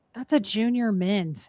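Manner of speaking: normal talking voice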